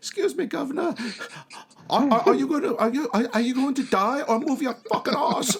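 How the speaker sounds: put-on little boy voice. Imagining a boy behind someone crossing a rope bridge, in a little Oliver Twist boy voice. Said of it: "this little like Oliver Twist boy behind you".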